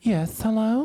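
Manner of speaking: fake, put-on woman's voice. Performing a line after being asked for the prank call voice: put-on woman's voice. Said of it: "do the woman's voice you did on the".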